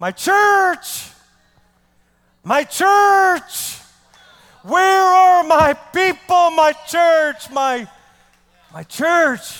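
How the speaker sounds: loud, high, stretched-out shout. Preaching about hearing God today: imitating God shouting. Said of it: "you would hear him shouting out".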